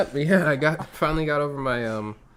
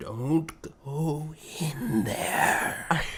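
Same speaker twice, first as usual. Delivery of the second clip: put-on hushed, breathy, spooky whispery old voice; 5 dB quieter than usual. Podcaster describing what another's voice brings to mind, in an old movie gravedigger voice. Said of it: "the old gravedigger ... He's all".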